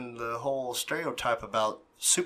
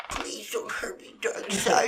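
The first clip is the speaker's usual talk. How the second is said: put-on timid pleading voice, pitched higher; 8 semitones higher than usual. Acting out how the villain pleads with Darkseid: imitating timid Steppenwolf. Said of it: "whenever he was being timid".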